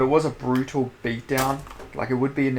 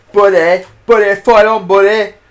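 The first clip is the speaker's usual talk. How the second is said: put-on UK referee voice with lisp, higher, louder; 7 semitones higher, 12 dB louder than usual. Retelling the referee's words in a bad Marc Goddard impression. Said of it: "I can't do a Mike Goddard".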